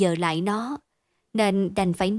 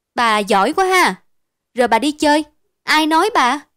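loud, raised voice; 4 semitones higher, 8 dB louder than usual. Criticised to his mother, the boy answers back to his accuser, raised voice. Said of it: "Tâm bặm môi nhìn Thu rồi lớn tiếng".

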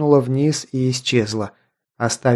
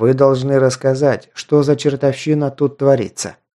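ordinary delivery, nothing marked

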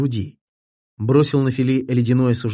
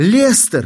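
sobbing, tearful shout, very high and loud; 9 semitones higher, 6 dB louder than usual. A man in tears rushes through the house calling out, crying out in tears. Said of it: "весь в слезах он метался по дому".

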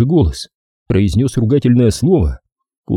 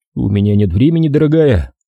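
plain

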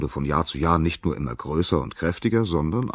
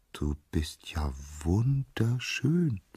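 tender, soft, lovestruck, very slowly drawn out; 3 semitones higher, 5 dB quieter than usual. Narrator reading a nymph speaking to a youth at the river, soft, lovestruck voice. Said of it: "sagte die Nymphe ganz verliebt mit sanfter Stimme".

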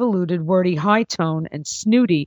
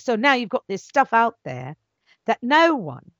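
put-on English accent voice; 4 semitones higher than usual. Talking about writers and scripts, the speaker slips into his English accent. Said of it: "there's my English voice".

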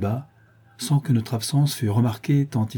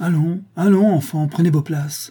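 rushed, hurried, high-pitched shout; 7 semitones higher, 4 dB louder than usual. Hindley, rushing in, speaks to a child: shouted. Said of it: "cria Hindley en entrant précipitamment".

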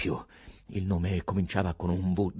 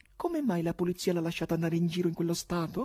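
very high-pitched, frightened, scared delivery; 11 semitones higher than usual. One of two voices heard on the veranda reacts to the poet, frightened.

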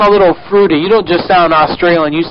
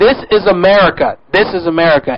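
normal talking voice

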